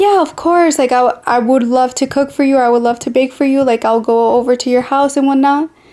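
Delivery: playful, flirty, charming, sweet-talking tone. Retelling her own yes to cooking at his house: imitating her own flirty reply. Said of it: "So me being all flirty".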